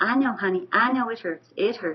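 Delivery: put-on sweet, sugary southern accent. Quoting Riley pushing for more reps, imitating Riley's sweet southern voice. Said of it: "she would say with this sweet southern voice".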